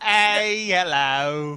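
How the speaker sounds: poor put-on British accent. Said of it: "Am I really bad British?".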